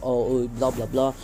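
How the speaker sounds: ordinary delivery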